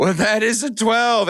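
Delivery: put-on half-laughing delivery. Retelling how a broadcaster announced the pick: imitating Bucci Grass half-laughing. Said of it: "borderline laughing as he says it".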